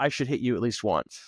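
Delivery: ordinary delivery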